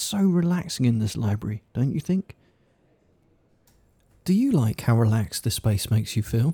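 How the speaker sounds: serene, calm, gentle, soothing, relaxing tone. Speaking to a listener in a library to keep it calm, quiet voice. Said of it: "if I'm talking in a quiet voice".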